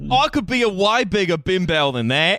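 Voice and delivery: fake Australian accent, laid on thick. Acting out a meme line as a bimbo: put-on australian accent. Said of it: "That's such a good Australian accent".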